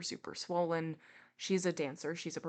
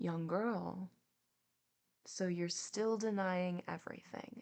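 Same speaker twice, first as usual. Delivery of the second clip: mock, very gentle, mild voice; 3 semitones higher than usual. Retelling Jacques questioning a young girl who denies everything, imitating Jacques's gentle voice. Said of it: "being so gentle in his in his voice".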